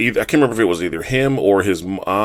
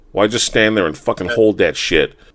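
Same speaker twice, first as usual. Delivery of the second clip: normal talking voice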